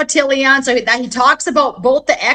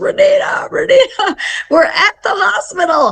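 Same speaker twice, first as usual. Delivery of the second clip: mock high, slow, frantic bawling and sobbing; 6 semitones higher than usual. Retelling a caller's voicemail, imitating someone sobbing frantically. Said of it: "screaming on my voicemail, crying".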